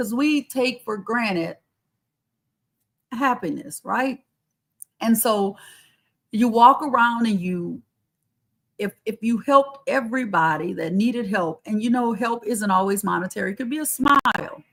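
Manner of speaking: emotional, moved voice, welling up while talking. Speaker addresses the audience and admits getting emotional. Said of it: "I'm getting emotional".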